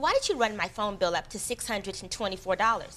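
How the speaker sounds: normal talking voice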